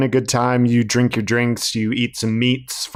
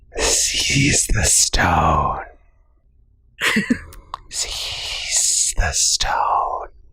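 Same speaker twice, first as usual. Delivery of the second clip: soft, hushed whisper close to the ear; 7 semitones lower than usual. Playing a voice heard inside someone's head, whispering. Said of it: "you hear a whisper in your ear".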